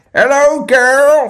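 Cornwall accent. Asked how to do a Cornish accent, the speaker demonstrates: Cornish accent. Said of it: "How do you do Cornish accent?".

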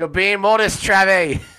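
loud, high-pitched mock scolding with teasing tone.

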